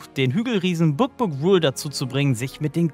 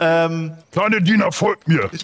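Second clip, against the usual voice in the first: angry giant voice, louder; 4 dB louder than usual. Game master voicing an angry six-meter giant chasing a player; angry giant voice. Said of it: "wo ein 6 Meter großer, gut gebauter Riese euch anstarrt und sauer auf dich ist".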